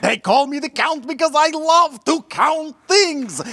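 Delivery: big, exaggerated puppet character voice. Explaining his name to Doctor Oz: Count von Count voice. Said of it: "It is the Count from Sesame Street".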